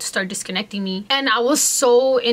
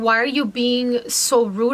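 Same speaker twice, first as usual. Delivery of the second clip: usual speaking voice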